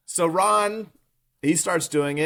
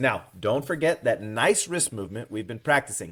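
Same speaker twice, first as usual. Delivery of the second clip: ordinary talk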